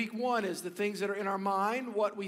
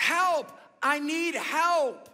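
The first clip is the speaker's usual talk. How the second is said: raised, high-pitched yell projected outward; 7 semitones higher, 6 dB louder than usual. Telling a story of a man caught by a bush on a mountainside: retelling a yell for help. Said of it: "he yelled out there and he says".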